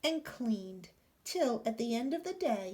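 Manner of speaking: plain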